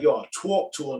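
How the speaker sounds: put-on casual New York street accent. Comparing how people say a phrase, imitating a new york accent. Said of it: "Like New York, they'll be like".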